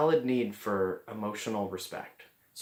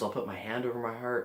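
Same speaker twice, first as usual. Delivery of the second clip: ordinary talk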